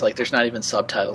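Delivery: plain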